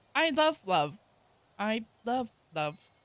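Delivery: slow, sarcastic, plainly insincere. Answering a remark about the month being colorful: sarcastic. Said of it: "Sandra is sarcastic".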